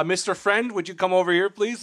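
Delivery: smug, snooty, self-assured police officer voice. Retelling a shakedown from a police officer: imitating a snooty, confident cop. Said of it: "very snooty, confident".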